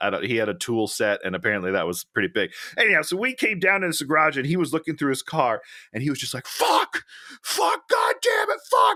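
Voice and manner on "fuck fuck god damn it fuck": play-acted very high, very slow, drawn-out wailing cries. Retelling how a man in a garage reacted to his car: imitating a man screaming. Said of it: "And just screaming".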